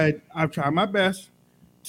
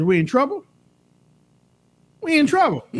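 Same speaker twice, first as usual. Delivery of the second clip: acted-out high, tearful, sobbing man's voice; 9 semitones higher, 4 dB louder than usual. Telling the audience what a struggling man says, imitating a crying man. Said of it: "he lays his head on your breast and he's crying".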